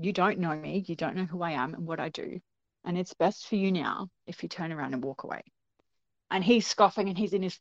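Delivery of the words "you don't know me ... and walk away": composed, even-tempered, very calm and steady. Retelling how she warned an aggressive man, imitating someone speaking very calmly. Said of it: "she just said very calmly".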